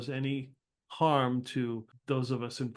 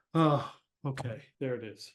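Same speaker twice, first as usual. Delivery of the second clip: said with a huge, heavy sigh. Voicing a character as a package is opened: with a huge sigh. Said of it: "she just takes a huge sigh".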